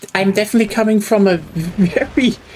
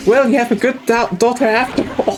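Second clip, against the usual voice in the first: mock, dripping, heavily sarcastic, backhanded tone; 3 semitones higher than usual. Retelling what a friend of the mother said after coming out: imitating a sarcastic remark. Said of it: "very sarcastically said".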